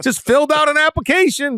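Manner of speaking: high-pitched sarcastic quip. Answering news about tampering rules: sarcastic tone. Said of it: "do I detect sarcasm in your voice".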